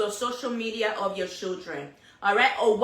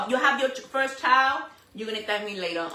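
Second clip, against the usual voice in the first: ordinary talk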